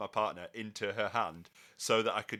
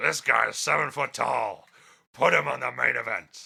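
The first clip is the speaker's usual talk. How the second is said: very loud, rasping, rough bellowing voice; 3 semitones higher, 9 dB louder than usual. Talking about the wrestler Big Cass, in a Vince McMahon voice. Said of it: "but in a Vince voice".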